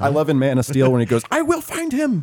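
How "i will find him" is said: put-on, very high, screaming cartoon-villain voice. Quoting a movie villain's line, imitating Michael Shannon screaming. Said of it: "He's, like, screaming".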